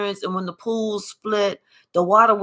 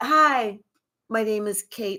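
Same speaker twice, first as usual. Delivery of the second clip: put-on sweet, innocent tone; 3 dB quieter than usual. Imitating someone introducing themselves: imitating an innocent, sweet voice. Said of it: "Looking all innocent and sweet".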